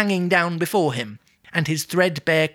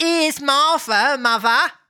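Cockney whine, pitched very high; 11 semitones higher, 4 dB louder than usual. Trying out a different character voice, the speaker goes for a whiny Cockney. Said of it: "a Cockney whiny".

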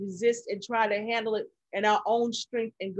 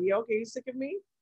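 mocking, scornful jeer delivered through laughter. Imitating the devil laughing at someone fighting alone: devil laughing mockingly. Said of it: "he laughing at you like".

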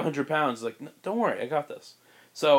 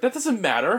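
high, prickly, defensive tone; 8 semitones higher than usual. Retelling how Ben answered a question about his dress choice: imitating Ben getting defensive. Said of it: "getting really defensive about his choices".

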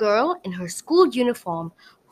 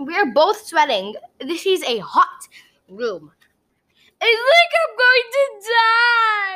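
whiny moan, "die" stretched; 11 semitones higher, 3 dB louder than usual. Gemma complains to Wilbur the unicorn in a steaming hot room, whining. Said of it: "Gemma whined".

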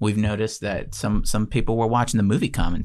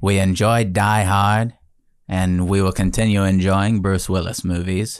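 flat tone, pushed out forcefully; 5 dB louder than usual. Showing the flatness in an actor's voice with a Bruce Willis impression. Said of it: "That's a pretty good Bruce Willis".

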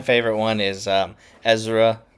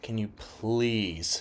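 fed-up, annoyed, exasperated tone; 10 dB quieter than usual. Retelling his partner's request to clean the sink: imitating an exasperated eye-roll request. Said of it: "she did the eye roll and everything".

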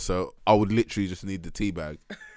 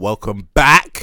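put-on shout, much louder; 13 dB louder than usual. Describing the Source London podcast intro, imitating Shay's shout. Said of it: "Shay shouts".

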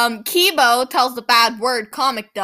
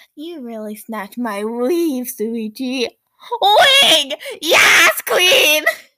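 rough put-on character voice. Retelling what was said: Kokichi impression. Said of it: "in my best Kokichi impression".

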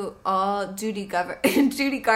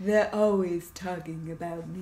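low, deep voice-over voice speaking as a pet; 5 semitones lower, 5 dB quieter than usual. Doing a voiceover for the pet Peppa: voicing the pet Peppa. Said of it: "That's the voice".

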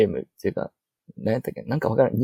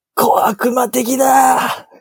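intense, overwrought anime voice, very high and loud; 12 semitones higher, 5 dB louder than usual. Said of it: "カルーアミルクを飲んだ時のカイジの真似".

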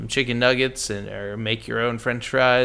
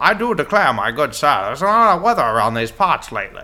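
raised, early twentieth-century American accent; 2 semitones higher, 7 dB louder than usual. Answering why people talked like that back then, old-timey early-1900s american voice. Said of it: "you are an American in the early twentieth century".

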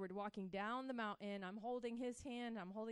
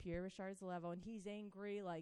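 ordinary talk

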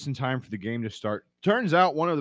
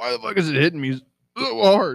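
loud, pitched-up exclamation broken by hiccups; 7 semitones higher, 7 dB louder than usual. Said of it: "I got the heat hiccups".

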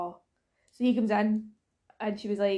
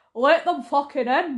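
broadest possible thick, exaggerated Scottish accent; 5 semitones higher, 6 dB louder than usual. Mimicking a companion's earlier shout to let people in: exaggerated Scottish accent. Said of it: "in your most Scottish accent".

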